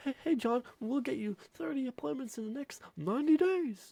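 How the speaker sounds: half-hearted, unconvincing delivery. Showing how not to say the message, the speaker sounds uncommitted and unconvincing. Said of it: "do you sound like this? ... Or do you sound very committed".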